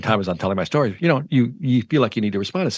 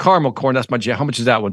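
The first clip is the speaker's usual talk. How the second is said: ordinary delivery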